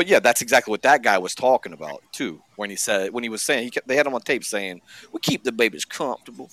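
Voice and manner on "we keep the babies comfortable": put-on creepy hillbilly accent. Quoting a man caught on tape, in a creepy hillbilly accent. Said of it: "in that creepy ass hillbilly accent".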